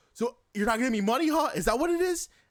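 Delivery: very loud, high, rising hollered yell. Retelling a stranger who yells out across the street: imitating someone yelling. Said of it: "he yells out to us".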